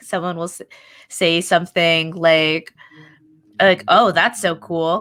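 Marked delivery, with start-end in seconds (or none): 3.9-5.0 acted approving tone meaning the opposite, sarcastic. Retelling what someone says to them: imitating a sarcastic tone.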